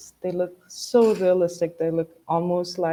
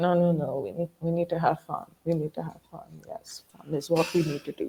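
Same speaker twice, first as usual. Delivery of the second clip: soft, sleepy half-whisper, half-asleep; 5 dB quieter than usual. Voicing a figure asleep in a corner, half-whispering to themselves in sleep. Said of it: "they're just whispering to themselves".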